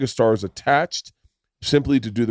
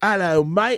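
mock, put-on British accent, higher; 8 semitones higher than usual. Mocking a guy who plays Martin Luther King: mock British accent. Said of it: "to have a guy come in and go".

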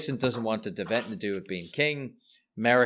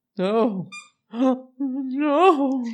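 loud, very high, drawn-out, fake sobbing; 8 dB louder than usual. Imitating an actress's fake crying in a movie scene: imitating fake crying. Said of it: "fakest of fake crying".

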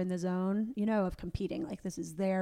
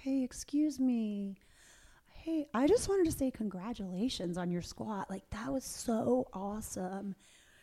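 mock, nicely mannered, polite, courteous tone; 3 semitones higher than usual. Retelling someone's congratulations on a squat, imitating a polite tone. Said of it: "Kim is like so polite".

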